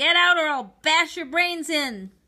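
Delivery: loud, high-pitched shouting. A man shouts at a boy who has come to him for beans: shouted threat. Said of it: "he shouted at me".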